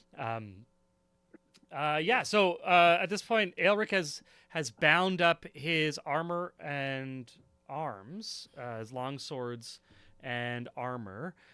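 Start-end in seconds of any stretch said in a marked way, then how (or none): none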